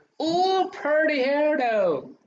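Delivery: high, slow, gushing coo. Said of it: "That's why I was like".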